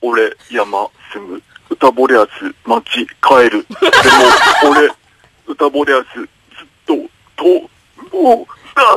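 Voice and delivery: halting, broken monster-like voice in fragments. Doing an impression that listeners call a monster, in a broken monster-like voice. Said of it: "モノマネじゃねえんじゃねえの、化け物なんじゃねえの".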